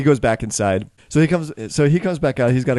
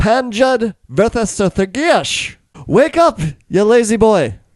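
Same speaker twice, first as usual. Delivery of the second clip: shrill high-pitched yelling; 9 semitones higher, 4 dB louder than usual. Game narrator voicing a character who pounds on a door and yells out, yelling. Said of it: "and he yells out".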